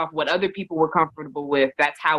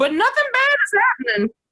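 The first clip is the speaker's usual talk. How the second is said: high, loud, playful voice.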